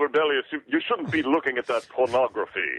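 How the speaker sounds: mocking, plummy, royal-sounding posh British accent. Mocking how David talks, imitating David's Queen-like voice. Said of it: "he speaks like the Queen".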